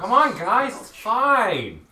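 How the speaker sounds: very high, slow yell with "fine" stretched. In a game, calling to the group going down a ladder, yelling out. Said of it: "I'm yelling out".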